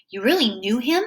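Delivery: plain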